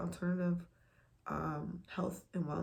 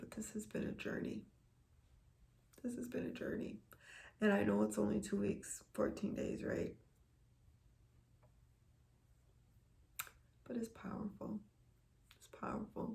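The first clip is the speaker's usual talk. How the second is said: fighting back tears; 3 semitones higher, 4 dB quieter than usual. Speaking to viewers about a two-week journey, trying not to cry. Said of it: "I'm trying not to cry".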